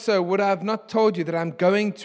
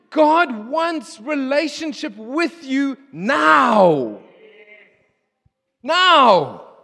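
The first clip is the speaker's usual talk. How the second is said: very slow, loud, high shout, stretched long; 6 semitones higher, 6 dB louder than usual. Preaching that God wants relationship with you now: shouting. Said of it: "Sorry for shouting".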